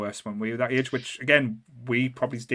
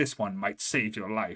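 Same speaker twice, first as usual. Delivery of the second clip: put-on serious voice, quieter; 2 semitones lower, 4 dB quieter than usual. Retelling someone handing over a horror comic, imitating Corey Feldman's serious tone. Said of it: "in the most serious tone that you've ever had there".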